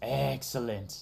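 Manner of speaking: creaky, rough cartoon voice creaking in the throat. Reacting to a chat idea with a one-word joke: Mister Burns voice. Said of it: "In my Mister Burns voice".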